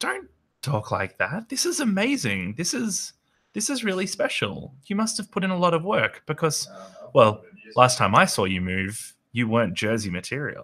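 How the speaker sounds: fond, admiring scolding tone. Narrating a scene, Eleanor looks up at you and speaks: Eleanor's playful scolding. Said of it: "Like playful scolding".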